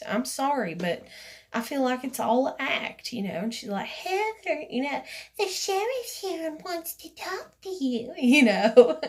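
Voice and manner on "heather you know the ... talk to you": put-on sweet, high, little old-lady voice. Retelling what a woman said to her, in a sweet old woman voice. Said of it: "in her little sweet old woman voice".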